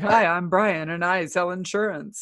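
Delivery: imitated male voice, cheesy. Retelling meeting a guy in a lineup: imitating Brian, cheesy. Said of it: "totally cheesy".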